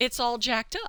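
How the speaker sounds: solemn, matter-of-fact, dead-serious, straight delivery. Retelling what the youngest son said about his pizza: imitating a deadpan child. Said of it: "with a straight face".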